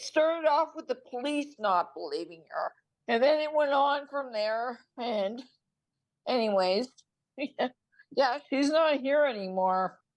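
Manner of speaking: talking through tears, tearful crying speech. Speaker telling hosts about a woman who is gone, crying. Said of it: "I'm crying".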